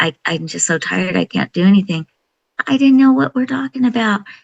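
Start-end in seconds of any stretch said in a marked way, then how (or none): 0.0-2.1 mock crying, put-on tearful tone. Retelling what someone said while crying on the phone: imitating someone crying. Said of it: "I remember her crying to me on the phone saying".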